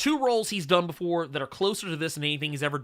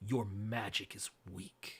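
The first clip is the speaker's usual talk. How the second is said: mock very low, hushed, slow menacing tone; 7 semitones lower, 13 dB quieter than usual. Quoting how someone delivers a line, mock-menacing tone. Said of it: "He's saying it menacingly".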